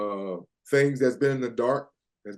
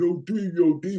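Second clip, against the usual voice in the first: put-on high, very slow, stretched New York accent; 3 semitones higher than usual. A former player recalling a teammate calling out to him at practice, in a New York accent. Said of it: "with that New York accent".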